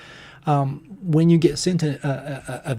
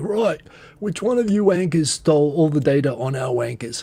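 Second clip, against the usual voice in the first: terrible, fake, put-on Cockney accent. Imagining a line from Butcher of The Boys, in his bad Cockney accent. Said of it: "Butcher from the Boys would say in his terrible New Zealander uh, imita impersonation of a Cockney accent".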